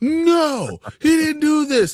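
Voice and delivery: put-on very high, slow scream, "no" stretched. Retelling watching the episode, jumping out of the seat: imitating own screaming. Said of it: "I was screaming".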